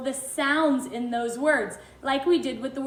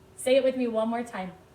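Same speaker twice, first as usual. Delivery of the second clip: plain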